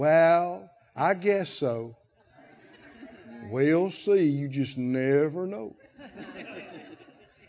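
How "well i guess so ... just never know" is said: uncertain, wishy-washy voice. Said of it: "Faith doesn't talk like that".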